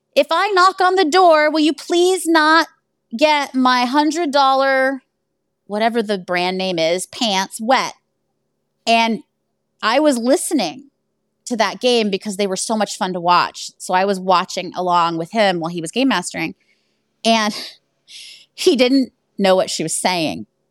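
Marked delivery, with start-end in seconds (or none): 0.1-7.9 high-pitched, carrying yell. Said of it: "She yells up to Jeremiah".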